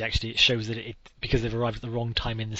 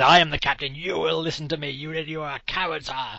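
mock furious yell, high-pitched and ranting; 5 semitones higher, 4 dB louder than usual. Retelling how the captain demotes his officer in front of the men: imitating someone screaming. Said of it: "screams at him".

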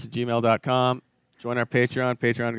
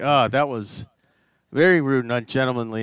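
ordinary delivery

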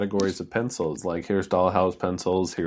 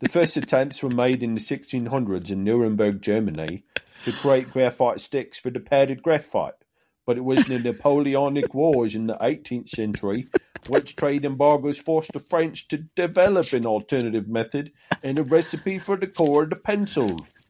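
put-on British accent, pitched up, held throughout; 6 semitones higher than usual. Redoing a reading about pencil history when asked to restart: British accent. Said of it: "I should have said that in a British accent again".

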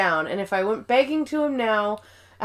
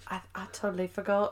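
British woman voice, quieter, lower; 2 semitones lower, 11 dB quieter than usual. Retelling a scene where everyone confronts Nellie, doing a Nellie impression. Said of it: "Your Nellie impression is money".

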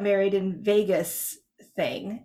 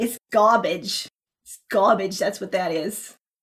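attempted Boston accent. Joking that the noise outside is just garbage: put-on boston accent. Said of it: "Was that a good Boston accent?".

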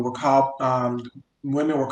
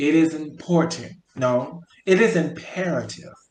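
drawn out very slowly, deliberate emphasis; 3 semitones higher than usual. Closing a Mother's Day special, speaking to listeners, slowly. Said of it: "I'm going to say that slowly".

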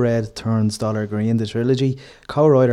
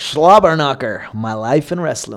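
bad, botched, put-on Oklahoma accent; 2 semitones higher than usual. Announcing a wrestling commentator's book title, in a bad Oklahoma accent. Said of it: "your attempt at an Oklahoma accent there".

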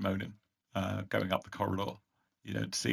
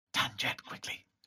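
soft, hushed, breath-only whisper; 3 semitones higher, 8 dB quieter than usual. Narrating a scene, the storyteller voices a woman who whispers. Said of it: "Then she whispers".

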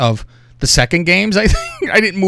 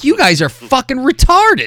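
swooping, high yelling; 9 semitones higher than usual. Retelling what they yelled at the tv during a football game, retelling a yell. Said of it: "I was yelling at the TV".

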